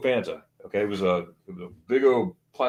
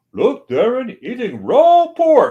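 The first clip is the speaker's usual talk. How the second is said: put-on Dutch accent, very loud, high, shrill; 13 semitones higher, 9 dB louder than usual. Retelling what Dutch said to Darren mid-bite, imitating Dutch's Dutch accent. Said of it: "and he has a Dutch accent".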